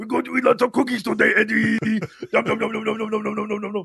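"yums" rasped out roughly. Speaker shows how the Venom symbiote sounds, in a Cookie Monster voice. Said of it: "as like the Venom symbiote is just Cookie Monster".

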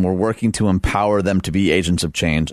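ordinary talk, nothing marked

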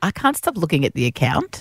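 ordinary talk, nothing marked

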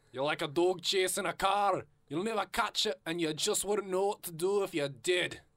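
attempted Scottish accent. Asked to read a dad's line in scottish, trying a scottish accent. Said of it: "Can you do Scottish?".

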